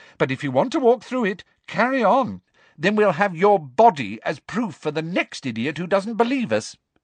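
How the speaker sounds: exasperated, fed-up tone. Narrator reads a character warning people away from the gas: exasperated. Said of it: "in a convincingly exasperated voice".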